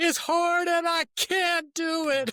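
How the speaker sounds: put-on tearful crying, pitched very high. A father retells his son's reply to his pep talk, imitating Eli crying. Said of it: "he's crying and he's like".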